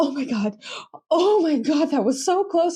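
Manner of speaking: acted, high, frantic freak-out, unable to calm down. Retelling a reaction to a close race: imitating Kimi losing it. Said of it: "Kimi literally losing his shit watching the race".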